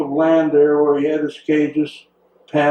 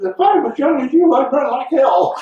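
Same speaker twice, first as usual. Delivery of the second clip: shrill, squeaky, very high voice; 10 semitones higher than usual. Retelling Wilbur answering a younger man asking what to do: squeaky Wilbur voice. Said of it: "in the squeaky voice".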